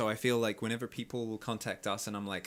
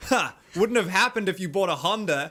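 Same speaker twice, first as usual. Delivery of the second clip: bellowed at full volume, pitched up; 8 semitones higher, 11 dB louder than usual. Retelling what a passing driver said: imitating someone yelling. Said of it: "You're yelling at me from a Hyundai".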